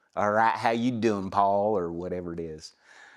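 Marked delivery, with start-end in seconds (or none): 0.1-1.7 Southern American accent from Atlanta, Georgia. Retelling doing a line in a voice recording session: Atlanta, Georgia accent. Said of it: "started doing accents".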